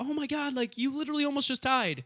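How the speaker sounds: put-on frantic, very high, loud alarm. Retelling a girlfriend's reaction to a near-fatal crash: imitating Alana freaking out. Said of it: "she was, like, freaking out".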